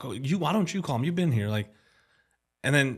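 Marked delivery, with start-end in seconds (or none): 0.0-1.5 play-acted fed-up, exasperated, frustrated tone. Recalling being asked to phone people for someone who spoke no english, imitating own frustrated reply. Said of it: "I'd be like so frustrated".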